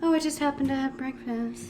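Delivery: high, quiet, mock innocent voice.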